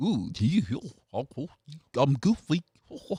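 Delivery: every word stretched out, pitch swinging up and down. After a friend says he's not into Disney, the speaker does a Goofy voice. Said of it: "you don't know Goofy".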